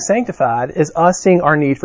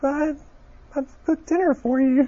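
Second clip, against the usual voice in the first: put-on quivering voice, much higher, quieter; 10 semitones higher, 8 dB quieter than usual. Retelling a phone call, imitating Lauren's quivering voice. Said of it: "a little bit of a quiver in the voice".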